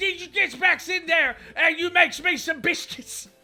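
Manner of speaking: put-on Cockney accent. Joining a bit of Cockney back-and-forth: put-on Cockney accent. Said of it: "can I talk in a little Cockney accent".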